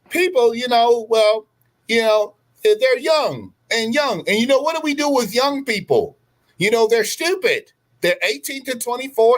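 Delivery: very high, squeaky woman's voice. Retelling what she said on a tour, imitating a woman's voice. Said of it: "I'm trying to do her voice".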